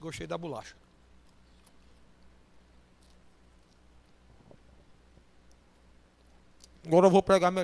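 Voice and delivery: words spoken while chewing, mouth full. Preaching while eating a cookie, talking with mouth full. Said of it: "falar de boca cheia".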